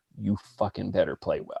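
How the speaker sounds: acted, stone-cold, dead serious tone. Retelling a competitive person's warning before a game: imitating someone dead serious. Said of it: "dead on serious".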